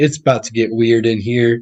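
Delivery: normal talking voice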